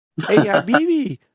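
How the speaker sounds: high-pitched, mocking cartoon voice. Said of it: "he was sounding like I Feeling".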